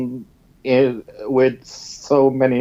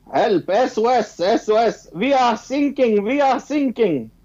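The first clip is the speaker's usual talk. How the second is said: very high, frantic, urgent cry; 10 semitones higher than usual. Telling a joke, voicing german sailors calling for help: imitating german sailors on the radio. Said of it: "two Germans that was on work in a".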